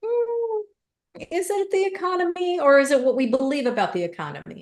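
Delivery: high, skeptical, rising, questioning tone. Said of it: "And I'm like".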